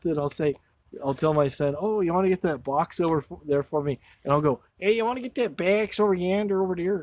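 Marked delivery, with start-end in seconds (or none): 4.8-7.0 put-on Chicago accent, pitched higher. Asking their son to get a box, the speaker slips into a chicago accent. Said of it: "did we just go to Chicago?".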